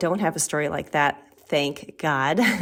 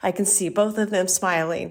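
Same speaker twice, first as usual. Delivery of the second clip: choked up, right on the verge of crying. Recalling a childhood memory of both parents smiling: about to cry. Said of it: "I'm going to cry".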